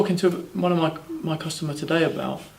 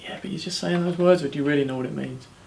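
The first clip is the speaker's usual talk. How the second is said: ordinary talk, nothing marked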